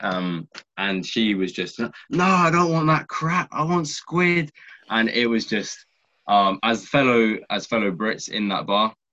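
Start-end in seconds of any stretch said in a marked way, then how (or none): 2.1-4.5 put-on very high, screeching drunken scream. Retelling how a drunk tourist screamed at waiters: imitating a drunk woman screaming. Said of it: "she was screaming at the waiters".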